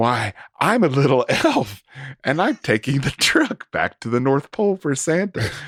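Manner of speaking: heavy, laid-on-thick, dripping sarcastic voice. Retelling what the tow truck driver said: imitating heavy sarcasm. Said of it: "with heavy sarcasm".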